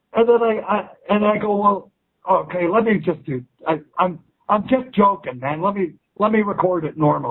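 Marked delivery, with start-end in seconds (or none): none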